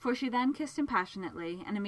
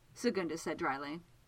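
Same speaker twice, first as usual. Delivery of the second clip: plain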